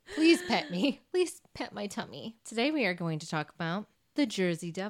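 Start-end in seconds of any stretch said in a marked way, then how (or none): 0.1-2.3 put-on cat voice. Voicing a pregnant cat that has to lie down: voicing a pregnant cat. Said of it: "she just has to lie down".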